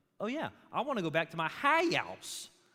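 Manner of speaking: put-on high, swooping, drawling Southern Georgia accent. Telling how Kate came home from Vacation Bible School, imitating Kate's Southern drawl. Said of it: "talking like this as though she's from Southern Georgia".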